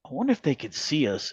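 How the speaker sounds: muttered under breath. Retelling watching the lights after friends went inside, the speaker mutters under breath. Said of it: "under my breath".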